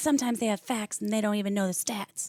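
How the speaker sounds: normal talking voice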